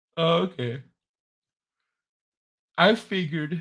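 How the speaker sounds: talking through a yawn. Tired streamer replying in conversation, yawning while talking. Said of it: "Sorry, I'm yawning".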